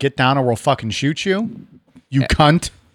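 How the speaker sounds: usual speaking voice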